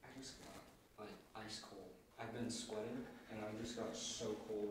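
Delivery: very soft, breathy, shaken, frightened hushed voice.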